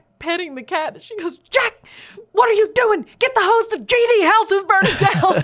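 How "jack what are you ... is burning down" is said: very loud, shrill, frantic, panicked shout of alarm. Retelling a mother finding her son petting the cat: imitating a mother's panicked yell. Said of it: "she was in a pure panic".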